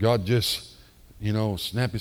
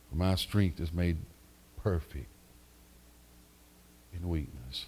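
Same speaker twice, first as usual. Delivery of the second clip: put-on whisper, lower and quieter; 5 semitones lower, 7 dB quieter than usual. Retelling the answer heard after praying: imitating a whispering voice. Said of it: "deep down in his whispering voice".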